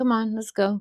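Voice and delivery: put-on flat deadpan monotone with no color. Retelling a line Spock says to Kirk: flat Spock delivery.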